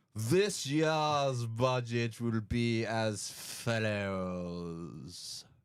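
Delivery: very slow, high announcing voice with a stretch. Delivering a budget announcement as the Chancellor: Jeremy Irons voice. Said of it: "I've never done Jeremy Irons before".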